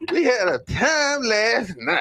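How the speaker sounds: put-on very high little-old-lady voice. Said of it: "How you talking like the old lady?".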